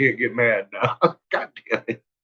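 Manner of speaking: talking through laughter. Trying to speak while laughing too hard to get mad: laughing while talking. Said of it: "I'm laughing too hard".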